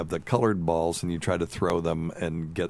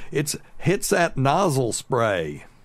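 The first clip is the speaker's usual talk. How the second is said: high, slow, homespun voice. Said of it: "she keeps going".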